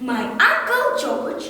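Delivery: plain reading voice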